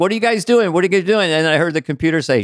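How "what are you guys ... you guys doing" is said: pitched-up yell, said twice. Retelling yelling at the pilots from the cockpit: retelling own yell. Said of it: "I was up there and I was yelling".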